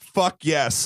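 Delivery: plain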